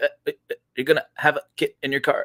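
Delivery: stalled, repeating, glitchy stuttering stammer. Retelling how a usually decent speaker glitched out: imitating a friend glitching. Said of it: "glitched out. He's like".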